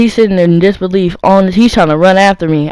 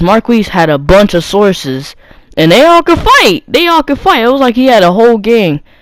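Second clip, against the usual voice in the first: usual speaking voice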